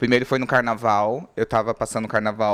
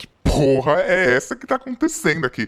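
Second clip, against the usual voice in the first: mock frantic shout, high, panicked, shocked and outraged; 6 semitones higher, 3 dB louder than usual. Recounting being groped by many hands, retelling own yelling. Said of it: "E eu comecei a gritar".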